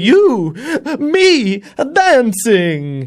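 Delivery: put-on belting, high, loud, excited Italian accent.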